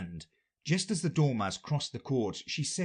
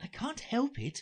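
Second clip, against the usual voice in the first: timid, meek, much higher pitch; 12 semitones higher, 3 dB quieter than usual. Alice, squeezed beside the complaining Dormouse, answers him meekly. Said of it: "said Alice very meekly".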